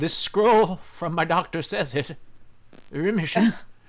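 put-on voice of an old wizard. Retelling Walt's scene from the series, Walt in wizard voice. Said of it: "Wizard voice".

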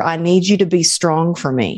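ordinary talk

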